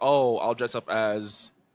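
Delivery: put-on stuttering, stammering speech. Retelling a man's reply about dressing up, imitating someone stuttering. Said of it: "was stuttering 'cause the man never watched".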